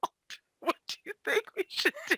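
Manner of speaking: hushed, conspiratorial stage whisper. Teasing players for plotting beside the guard: mock stage whisper. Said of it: "are you guys doing stage whispers".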